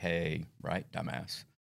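patronizing, condescending, talking-down tone. Showing how not to answer an angry person: condescending. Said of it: "condescending and "right,"".

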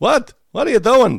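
very high, loud cartoon old-man cry. A host recalls a voice yelling from the crowd in a scene: old Simpsons guy voice. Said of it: "it sounded like some old guy from The Simpsons".

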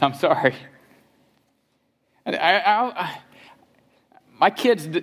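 on the verge of tears, choking up. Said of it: "I may cry through this".

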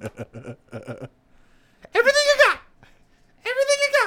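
high-pitched squeaky voice. Quoting a comedy movie role to another speaker: Thomas Lennon high-pitched squeaky voice. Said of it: "He did that high-pitched squeaky voice".

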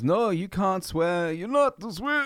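badly done, very high-pitched put-on voice. Retelling a comedy bit where a comedian forbids swearing: terrible Bill Cosby impression. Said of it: "terrible, terrible impersonation".

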